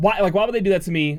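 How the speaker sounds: ordinary talk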